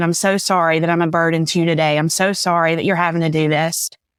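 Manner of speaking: tearful crying voice. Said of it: "I'm crying".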